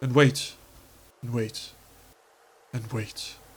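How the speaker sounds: hushed, breathy whispered nature-documentary narration. Hiding and waiting for a pursuer in a game: David Attenborough voice. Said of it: "So I'm just gonna Attenborough this".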